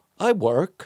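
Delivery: insecure, unsure-sounding delivery. Retelling a reply to a little kid: imitating Ari sounding insecure. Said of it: "he's going all insecure".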